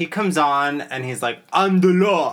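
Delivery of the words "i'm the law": horrible, loud, high put-on voice, badly belted. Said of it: "horrible Stallone impressions".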